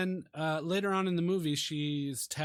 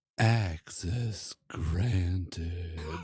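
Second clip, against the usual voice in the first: very deep, sultry, seductive computer voice; 9 semitones lower than usual. Retelling how a computer answered after a name was typed in: sexy computer voice. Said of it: "the most sexy computer voice I've ever heard is like".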